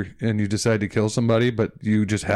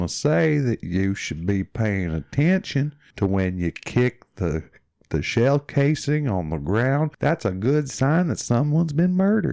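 slow put-on drawl; 2 semitones higher than usual. Imitating a man who talked slowly, with a Forrest Gump kind of drawl. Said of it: "he had like a Forrest Gump kind of drawl".

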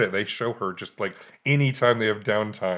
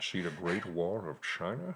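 put-on seductive, wooing delivery in a Scottish accent; 3 semitones lower, 11 dB quieter than usual. Retelling how Henry Jones Senior seduces the teacher: Henry Jones Senior Scottish voice. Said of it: "his Scottish way".

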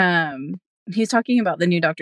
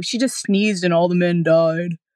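derisive, mocking put-on voice. Retelling someone's complaint about a movie in a mocking voice imitating him. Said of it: "I shouldn't use a voice like that to make fun of him".

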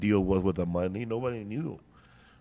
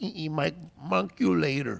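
high-pitched, slow, creaky voice; 8 semitones higher than usual. Recounting a young comic's bit, doing a Marvin the Martian impression. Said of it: "This is my impersonation of Marlon the Martian".

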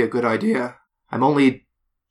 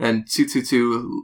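usual speaking voice

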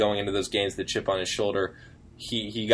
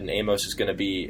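ordinary talk, nothing marked

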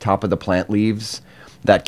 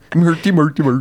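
fake Swedish accent, much higher pitch; 8 semitones higher, 3 dB louder than usual. After a co-host says he's talking with a Swedish accent, speaker goes on in a mock Swedish accent. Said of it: "a Swedish accent".

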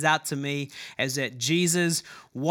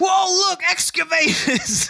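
thrilled, excited shout, very high and loud; 14 semitones higher, 5 dB louder than usual. Retelling passing a construction yard with his young son, acting out an excited shout. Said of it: "my excited voice".

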